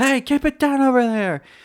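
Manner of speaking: high, loud yelling. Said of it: "the neighbor yells".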